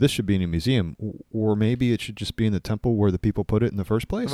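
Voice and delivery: ordinary talk, nothing marked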